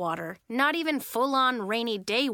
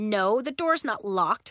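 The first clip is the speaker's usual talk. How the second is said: usual speaking voice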